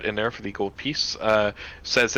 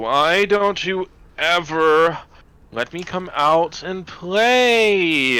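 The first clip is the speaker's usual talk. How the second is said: put-on very slow, high, stretched Valley Girl drawl; 7 semitones higher, 5 dB louder than usual. The narrator voices what Zachariah hears in a Valley Girl voice. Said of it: "you hear this same Valley Girl voice".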